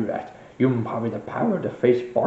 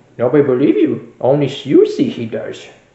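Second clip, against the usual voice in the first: loud character voice of a wise master; 6 dB louder than usual. Answering another character who asks for help: Yoda voice. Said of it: "Master Yoda, I am".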